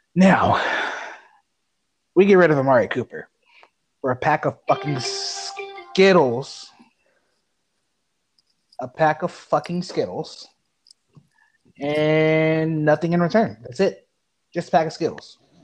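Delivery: calm, restrained voice over seething anger, "And" drawn out. Asked to stay tame yet still angry, the speaker vents, calm but pissed off. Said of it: "So this is my calm voice".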